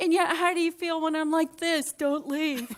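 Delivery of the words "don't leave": acted, desperate pleading tone. Demonstrating to a listener how a child pleads, acting desperate.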